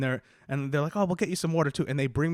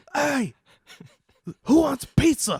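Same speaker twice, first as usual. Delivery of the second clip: put-on very high, drawn-out drunken party scream; 11 semitones higher, 6 dB louder than usual. Retelling calling out to a whole party while drunk: imitating own drunken scream. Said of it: "screamed to the whole party".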